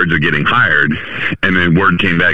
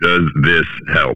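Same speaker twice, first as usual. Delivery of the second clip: convincing put-on Russian accent, very deep voice; 2 semitones lower than usual. Asked to do it again, answering in a deep Russian accent. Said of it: "I didn't know you could do Russian accents".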